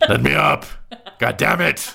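character voice yelling. Voicing a pinned werewolf demanding release: shouting in character. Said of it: "you hear a voice saying".

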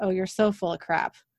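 ordinary delivery

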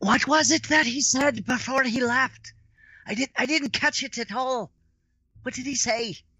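exaggerated audible whisper. In a tabletop game, turning to a fellow character after a death: loud stage whisper. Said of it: "in like a very loud stage whisper".

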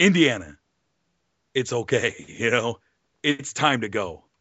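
mock-stern, put-on fatherly voice. Recounting a scene, the speaker quotes the father speaking to his son, imitating a father's stern voice. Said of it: "that great stern voice that only a father can give".

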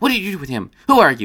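insistent, demanding tone. Narrator voicing Melkor questioning Sal; demanding. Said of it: "Melkor demanded".

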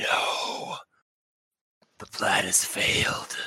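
raspy whispered voice, very slow. Retelling a scene where a fleeing figure speaks, raspy voice. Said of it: "you hear kind of a raspy voice".

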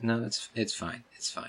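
deflated, disappointed. Voicing an NPC whose name was forgotten: deflated, disappointed. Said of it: "his emotions just sink".

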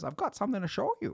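very high frog puppet voice. Retelling a video of a girl talking to Kermit the Frog, as Kermit the Frog voice. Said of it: "it's a girl talking to Kermit the Frog".

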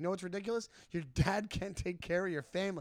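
put-on mild, heated, half-shouted ranting. Retelling a son's argument with his girlfriend: imitating someone screaming. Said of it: "screaming in his girlfriend's s-, face".

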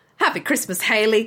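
accent drifting into an Australian accent. Taking turns saying christmas greetings, slipping into an australian accent. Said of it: "You went Australian".

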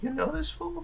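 hushed half-whisper, pitched very high. A player's character leans over to Gareth in the scene, half-whispering. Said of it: "I just kind of whisper to Gareth".

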